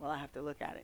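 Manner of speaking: very quiet, hushed, almost whispered soft words. Retelling a man's reply to her, spoken very quietly. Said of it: "very quietly".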